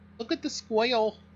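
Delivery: put-on high childlike voice, like a small kid. Joking about mispronouncing square bale wrapper, little kid voice. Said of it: "Sounds like I'm a little kid talking about a squirrel".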